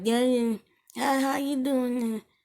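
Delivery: put-on high, slow, toothless old woman voice. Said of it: "So they have no teeth".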